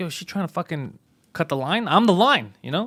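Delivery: ordinary delivery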